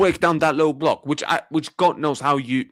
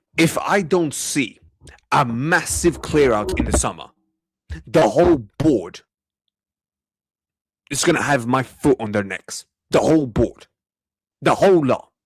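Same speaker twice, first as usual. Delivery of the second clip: barely restrained anger, held back; 2 semitones lower than usual. Warning the whole board about keeping these players next season: barely restrained anger. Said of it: "I am trying so bad right now not to scream".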